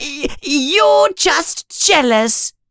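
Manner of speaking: very high, frightened, scared voice. Reading a story, Colin answers Malfoy in Colin's high, scared voice. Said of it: "says Colin in a high, scared voice".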